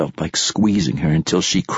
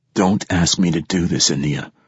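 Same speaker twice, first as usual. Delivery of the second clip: plain reading voice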